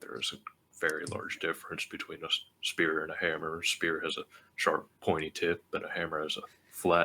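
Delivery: soft, grumbling mutter under the breath. Voicing Frog obeying an order, Frog mumbling under breath. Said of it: "mumble under his breath".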